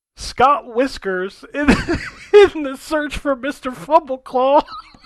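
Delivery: stifled laughter. Reading out a game title aloud while trying not to laugh. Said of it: "so I'm gonna try to say it without laughing".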